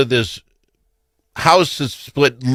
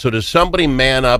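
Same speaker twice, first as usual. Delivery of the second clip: normal talking voice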